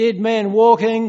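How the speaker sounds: slow, high, loud bellowing yell. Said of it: "the warden yells out".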